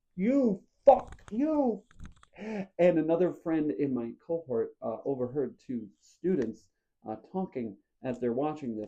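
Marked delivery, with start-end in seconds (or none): 0.2-1.8 mock very high-pitched, shrill, loud shout from afar. Retelling yelling into the phone while pacing a parking lot: imitating own yelling.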